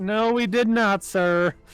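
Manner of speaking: slow, called-out yell. Voicing a receptionist answering from another room: receptionist yelling back. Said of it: "you hear the receptionist yell back".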